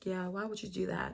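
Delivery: very quiet, totally unbothered, super calm voice. Retelling a mother's reply to an apology: imitating mom talking super calm. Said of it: "talking super calm".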